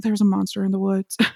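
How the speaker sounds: put-on mumble under breath. Recapping a story, voicing a character rolling his eyes: retelling a mumble under breath. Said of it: "he mumbles under his breath".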